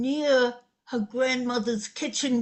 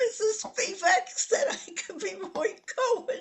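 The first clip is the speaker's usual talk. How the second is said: put-on high, soft, tearful weeping child's voice. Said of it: "I went home weeping".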